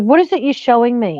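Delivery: mock irritated, confrontational, demanding, pissed-off tone. Retelling snapping at a helper over the meat cubes: retelling own pissed-off question. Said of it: "'cause I got really pissed off with her".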